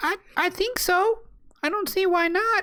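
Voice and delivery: put-on very high, childlike little girl voice. Voicing a girl who answers a question put to her, in a little girl voice. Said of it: "in my attempt at a little girl voice".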